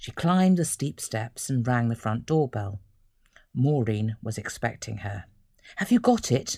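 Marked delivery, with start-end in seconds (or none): 5.8-6.6 fretful, anxious tone at very high pitch. Maureen, who was expecting Ellen, greets her at the front door, asking anxiously. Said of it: "Maureen asked anxiously".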